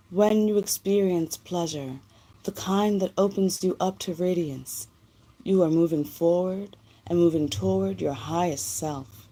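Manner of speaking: put-on sexy, seductive lady voice. Reading the Empress of Pleasure text aloud in a sexy lady voice. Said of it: "put on the sexy lady voice for this one".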